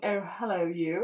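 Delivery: put-on British accent, only half-managed. Recommending a Netflix drama, trying out an attempted British accent. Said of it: "if you want to hear a cracking British accent".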